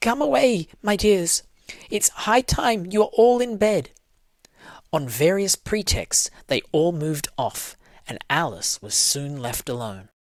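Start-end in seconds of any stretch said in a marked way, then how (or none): 0.0-3.9 high, quavering, trembling call. Narrator reading a canary calling out to its children, trembling voice. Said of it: "called out in a trembling voice".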